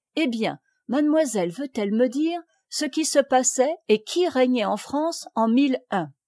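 ordinary delivery

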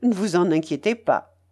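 ordinary delivery

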